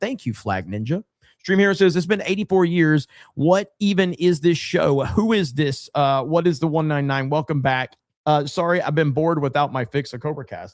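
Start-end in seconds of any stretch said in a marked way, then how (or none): none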